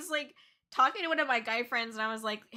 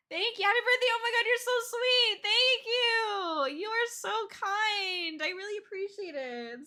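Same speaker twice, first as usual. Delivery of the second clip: very high, tearful speech through crying; 10 semitones higher than usual. Thanking supporters for birthday wishes after passing a goal, crying while talking. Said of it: "I guess I had more tears than I thought".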